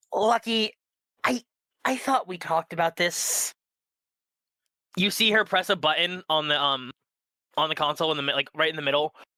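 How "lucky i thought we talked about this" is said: sighing heavily, higher and slower. Narrating the driver's reply to her hurt companion, with a heavy sigh. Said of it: "you hear like the heaviest of sighs".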